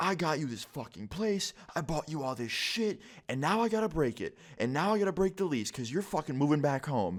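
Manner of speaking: put-on furious yelling. Retelling what an angry dad yelled at his son: imitating a dad yelling. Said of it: "I hear him yelling at his son".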